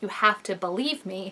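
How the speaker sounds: put-on hysterical sobbing and yelling. Retelling how a woman begged to be believed, acting out hysterical crying plea. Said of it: "she's kind of hysterical about it, like crying, yelling".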